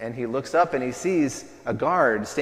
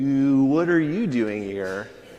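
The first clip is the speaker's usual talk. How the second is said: exaggerated, put-on California accent; 2 semitones higher, 4 dB louder than usual. Quoting the recurring line from a comedy sketch: California accent. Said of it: "this California accent nobody knew existed".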